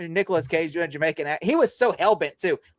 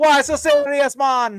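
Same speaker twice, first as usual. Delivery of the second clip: put-on spoken in a Jamaican accent; 8 semitones higher, 7 dB louder than usual. Joking about a Jamaican-style Joker design: Jamaican Joker voice. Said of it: "sounds like those two Jamaican fish".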